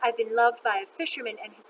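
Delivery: plain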